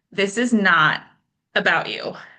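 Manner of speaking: play-acted calm, steady, firm and gentle. Speaker recounts a voice answering their tearful question; imitating a firm, gentle voice. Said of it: "that same firm, gentle voice said".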